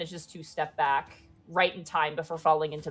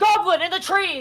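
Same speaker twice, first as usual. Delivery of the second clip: loud shouting; 12 semitones higher, 6 dB louder than usual. Voicing a galloping leader spotting a goblin in the trees: yelling a warning. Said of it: "and yells out".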